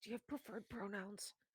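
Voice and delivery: very quiet, hushed voice. Acting out someone asking a careful question in a hypothetical scenario, lowered voice. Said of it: "lowers their voice and goes".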